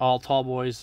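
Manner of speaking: ordinary talk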